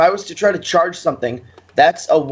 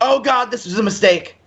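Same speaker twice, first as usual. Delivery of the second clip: pitched-up, shouted yell; 7 semitones higher than usual. Playing a character who wakes from death covering his ears: yelling in character.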